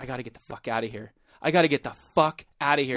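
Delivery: put-on desperate panic, fast and rattled off. Speaker recalling being high with a friend, reenacting the moment: retelling own panic. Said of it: "like panicking".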